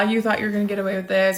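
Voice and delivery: put-on taunting laughter. Retelling how Mom laughed at the speaker after the officer left, imitating Mom's mocking laughter. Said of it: "laughing at me".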